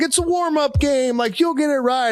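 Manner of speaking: mock taunting yell, pitched very high. Retelling bowlers shouting at each other: imitating people yelling. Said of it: "yelling all the things".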